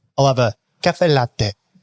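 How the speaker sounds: mock, fake Italian accent and pronunciation. Mocking how a customer orders coffee at a cafe, in mock italian pronunciation. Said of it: "don't pronounce your coffee order in Italian".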